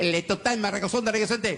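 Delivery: high-pitched, put-on Mexican Spanish announcer voice. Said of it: "I was in Mexico".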